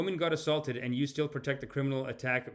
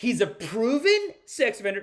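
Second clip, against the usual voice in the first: high, loud, mocking parrot voice. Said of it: "these people are just gonna run with that".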